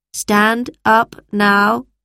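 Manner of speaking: flat, dull, commanding robot voice. A robot stops the lesson and addresses the children: commanding. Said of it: "commanded the robot".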